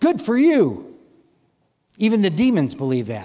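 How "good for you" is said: play-acted sarcastic, pitched-up dismissive tone. Answering someone who says they believe in god: sarcastic. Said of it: "James uses a bit of sarcasm here".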